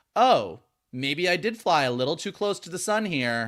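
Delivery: ordinary talk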